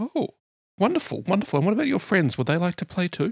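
put-on very high little girl voice. Game master voicing Ona, a girl talking with the players' characters, small girl voice. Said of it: "you hear the voice of a small girl".

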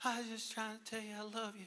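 tiny, high, soft mosquito-like voice. Retelling a child calling out from across the room: imitating Grace's tiny mosquito voice. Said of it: "like a mosquito got in the room".

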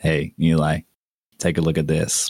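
muttering. A character gazing out the front window draws a companion's attention, mumbling. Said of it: "just kind of mumbles".

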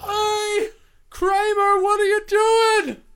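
very high, very loud, booming, slow drawn-out call. Doing a Seinfeld impression for friends discussing the show: imitating a Seinfeld character. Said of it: "I don't know what that was supposed to be an imitation of".

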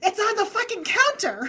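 acted shrieked yell, very high and loud. Retelling hearing a voice in the kitchen: imitating a ghost yelling. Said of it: "And I hear really loud".

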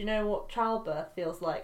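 plain

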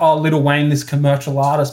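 plain

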